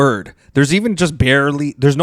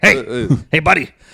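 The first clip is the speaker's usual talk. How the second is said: imitated Ukrainian accent. Retelling what a ukrainian man said while packing up, ukrainian accent. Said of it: "he's Ukrainian, so he's more like".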